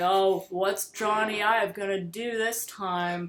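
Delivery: heavy, mocking sarcasm, drawn out. Retelling a writer dumping on Apple before a press day: retelling a super sarcastic remark. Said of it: "super sarcastic".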